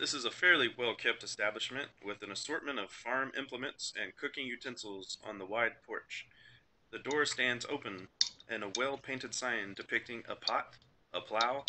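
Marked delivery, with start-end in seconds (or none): none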